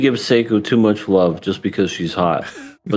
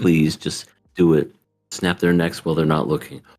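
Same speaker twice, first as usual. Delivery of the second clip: muttering under breath, lower; 5 semitones lower, 4 dB quieter than usual. Retelling what a character secretly says: imitating muttering under breath. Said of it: "saying under her breath".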